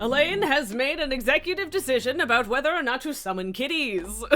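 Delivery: on-air radio announcer-style delivery. Speaker announces a decision to the listeners in a radio announcer voice. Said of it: "I don't know why I used the radio announcer voice for that".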